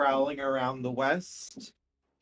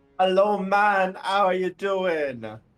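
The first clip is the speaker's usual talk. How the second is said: fake, put-on Jamaican accent, high-pitched and loud; 5 semitones higher, 7 dB louder than usual. Voicing a crab character after a player suggests it: put-on Jamaican accent. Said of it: "with a Jamaican accent".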